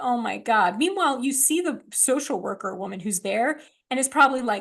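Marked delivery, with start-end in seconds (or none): 0.0-0.8 mock tearful, on the verge of tears, breaking down. Retelling a scene where she starts to break down: imitating someone breaking down. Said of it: "she starts to kind of break down".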